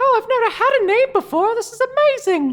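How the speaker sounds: shrill, very high, very loud delighted little-robot squeal. Voicing a newly named little robot minion who thanks the player: delighted small robot minion. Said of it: "he says".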